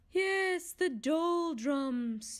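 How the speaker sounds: spoken through a yawn. Narrator reads a second unseen voice replying to him, yawning. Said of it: "yawned another voice".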